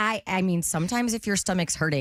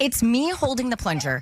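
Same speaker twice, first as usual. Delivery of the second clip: ordinary talk, nothing marked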